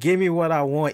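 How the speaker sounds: normal talking voice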